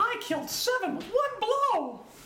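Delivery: squeaking, pitched very high. During talk of shooting ducks, break into an unrehearsed Mickey Mouse impersonation. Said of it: "my unrehearsed Mickey Mouse impersonation".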